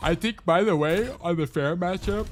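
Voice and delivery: talking through a yawn. Reviewing gameplay with another player, the speaker comments: yawning while talking. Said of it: "sorry for the yawning".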